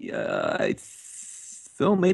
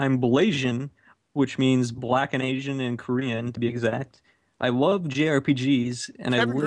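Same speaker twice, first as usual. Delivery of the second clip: ordinary delivery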